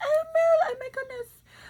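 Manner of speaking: put-on very high, fretting, little Victorian accent. An author imagining her character Mabel's reaction, in Mabel's little Victorian accent. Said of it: "in her little Victorian accent".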